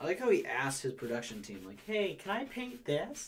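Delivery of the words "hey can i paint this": high, slow, drawn-out frog puppet voice. Quote Bob Ross asking his production team a question, in a Kermit voice. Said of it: "You sounded like Kermit".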